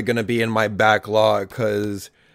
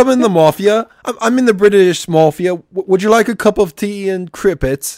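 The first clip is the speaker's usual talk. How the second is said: bad fake British accent, much higher pitch; 10 semitones higher, 7 dB louder than usual. Gamer joking with a friend about the Mafia collection, bad British accent. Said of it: "That was a terrible British impression".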